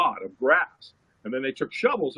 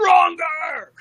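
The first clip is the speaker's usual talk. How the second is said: very high, loud, shrill screaming; 6 dB louder than usual. Retelling someone screaming in their face: imitating someone screaming. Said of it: "he screams at me".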